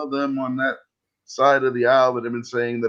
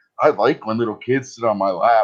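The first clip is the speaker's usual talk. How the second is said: plain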